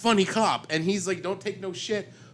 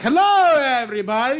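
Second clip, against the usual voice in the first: imitated upbeat doctor voice; 7 semitones higher, 8 dB louder than usual. Imitating a film's doctor character: Doctor Nick voice. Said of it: "he sounded like".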